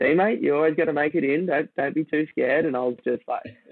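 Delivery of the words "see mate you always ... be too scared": high-pitched, chuckling and laughing through the words. Retelling a friend's reply after a wave hit: imitating Clint laughing while talking. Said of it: "he's just laughing, going".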